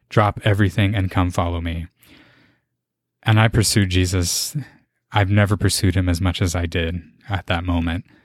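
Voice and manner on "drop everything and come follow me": plain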